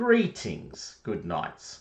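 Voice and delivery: swooping, animated, declaiming host-style proclamation. Voicing a knight greeting the Knights of Arthur: loud booming Brian Blessed voice. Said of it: "at the top of his voice, in a very loud and booming sound".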